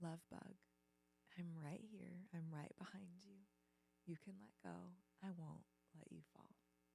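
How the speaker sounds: soft, steady, gentle, loving fatherly voice. Retelling a father's words to a child hanging from monkey bars: imitating a gentle voice. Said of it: "he just gently said".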